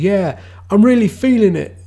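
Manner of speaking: put-on belted out loudly in an English accent. Quoting a game character's catchphrase in Shulk's English accent. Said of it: "he's like got an English accent and he goes".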